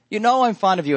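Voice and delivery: high, pleading, grieved voice.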